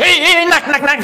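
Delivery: very loud, very high scolding. Acting out a mother scolding her child, very loud. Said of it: "keras sekali suaranya".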